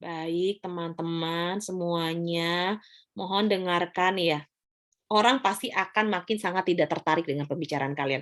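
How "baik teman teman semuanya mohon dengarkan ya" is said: very slow, low, dead-level monotone. Demonstrating an unsuitable speaking intonation to an audience, slow flat voice. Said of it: "tadi nggak tepat gitu ya, pelan, flat".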